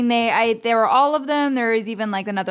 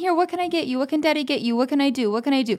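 put-on soft-hearted, doting voice, higher pitched; 3 semitones higher than usual. Imitating another speaker's parenting: imitating a caving, doting dad. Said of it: "you are the king of caving".

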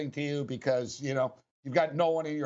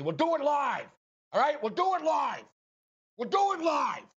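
high, sharply snapped outburst, swooping hard in pitch; 12 semitones higher than usual. Showing your co-hosts how you snap during these things, do a Bill O'Reilly impression. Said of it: "Is that a great impression or what".

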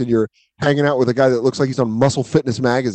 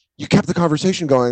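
mock-annoyed, angry, accusatory tone; 3 semitones higher than usual. Retelling what his ex-girlfriend said about his messages: imitating a mad ex-girlfriend. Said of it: "And then she was mad".

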